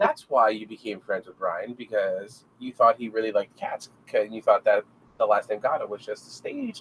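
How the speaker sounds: ordinary talk, nothing marked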